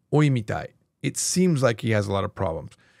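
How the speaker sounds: plain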